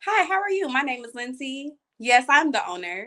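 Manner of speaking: put-on polished, proper, businesslike professional voice. Showing she can put on the same professional voice too, polished professional voice. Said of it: "the same professional voice that you're trying to put on, I could put it on too".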